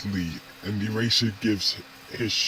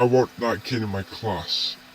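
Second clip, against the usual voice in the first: ordinary delivery, nothing marked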